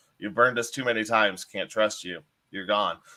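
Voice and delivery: ordinary talk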